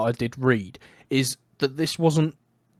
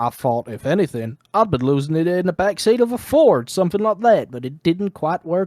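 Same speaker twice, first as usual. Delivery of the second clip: put-on Southern Georgia accent; 4 semitones higher than usual. Reading out another quote from him, the speaker does a Southern Georgia accent. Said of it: "I'll channel my inner Southern Georgia".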